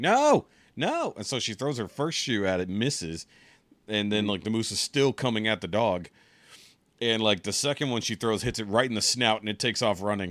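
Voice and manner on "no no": very high, loud shouting yell. Retelling how a woman yelled as a moose came at her dog, retelling her yell. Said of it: "she's like yelling".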